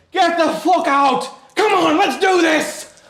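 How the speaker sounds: high, shrill, very loud furious scream with edge of fear. Narrator voicing a woman heard screaming from outside; furious woman screaming. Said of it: "a woman's voice screaming from outside. She sounds pissed".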